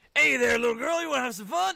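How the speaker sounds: high-pitched, loud, raspy put-on voice. Retelling a comedian's bit, doing the happy man voice. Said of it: "there was the happy man".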